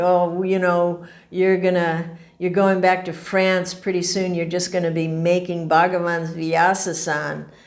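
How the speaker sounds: laughing, mocking, sarcastic teasing tone. Retelling a skeptical friend's teasing remark: imitating a sarcastic friend. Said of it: "in this sarcastic way".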